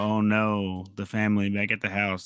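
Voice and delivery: ordinary talk, nothing marked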